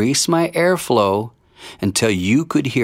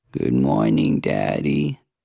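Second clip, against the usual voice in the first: very low, creaky, groggy vocal fry; 10 semitones lower than usual. Speaker demonstrating a baby's morning greeting, in groggy vocal fry. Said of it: "spoken in that natural groggy tone".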